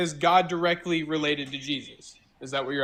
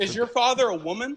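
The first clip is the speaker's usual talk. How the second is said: worked-up, overbearing, heated, loud, pitched-up voice; 8 semitones higher than usual. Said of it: "you gotta bring it down".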